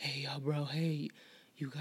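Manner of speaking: put-on play-acted slow, halting, stumbling stoned speech. Retelling a very high stranger asking for weed: imitating a very high guy. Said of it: "he couldn't even get it out. He was so high".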